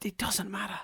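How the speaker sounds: hushed, whispered, quiet delivery.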